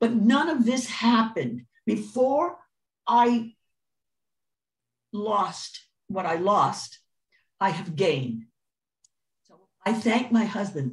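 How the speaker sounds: touched, slightly emotional, moved tone. Speaker thanks the husband while talking about giving to the homeless: a little emotional. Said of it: "I'm getting a little emotional".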